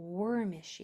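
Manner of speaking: stress on worm, the first syllable of wormishy. Pronunciation practice with made-up words: stress on worm in wormishy. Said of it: "if I say it with that first syllable accented".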